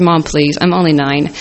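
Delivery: ordinary delivery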